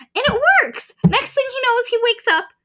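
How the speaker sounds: excited high squeal.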